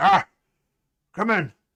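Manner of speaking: very loud, gruff man's voice. Game master voicing the harbour master answering a knock at his door: gruff man's voice. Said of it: "you hear the gruff voice of, of a man say".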